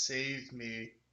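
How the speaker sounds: tearful, sobbing, crying voice. Game narrator voicing a ghost that speaks to a player, with a crying plea. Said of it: "It just starts crying and says".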